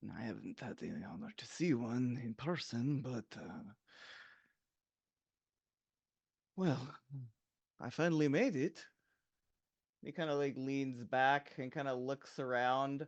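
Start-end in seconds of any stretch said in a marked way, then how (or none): 0.1-8.9 hushed murmur, muttered under the breath. Voicing a character rubbing a carved clan symbol: under his breath. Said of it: "He'll say kind of, like, under his breath".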